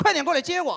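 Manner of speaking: sweet, coquettish, bossy pleading whine, high and loud. Retelling how someone told the driver to come pick her up: mock coquettish yet commanding. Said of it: "用一种带着撒娇但是又命令的语气".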